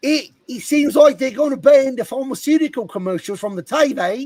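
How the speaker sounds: bad put-on Australian accent drifting British, loud. Attempting an Australian accent that comes out weird: horrible put-on Australian accent. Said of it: "let me try and do an Australian accent".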